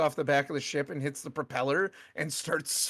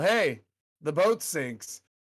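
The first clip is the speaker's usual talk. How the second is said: casual, offhand, drawn-out half-yell; 3 dB louder than usual. Retelling what a man walking past called out, imitating a casual half-yell. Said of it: "almost kind of yells sort of casually".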